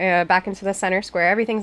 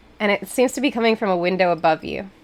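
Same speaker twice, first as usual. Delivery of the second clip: normal talking voice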